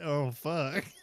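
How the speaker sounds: put-on sneaky, sheepish kid voice. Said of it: "but when he said".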